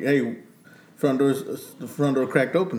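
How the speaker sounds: ordinary talk, nothing marked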